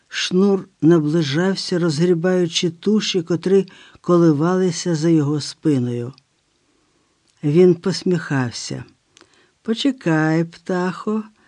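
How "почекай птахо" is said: gentle, tender, much quieter. Approaching a cornered woman, a man speaks to her; gently. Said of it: "лагідно промовляв він".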